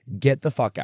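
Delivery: ordinary delivery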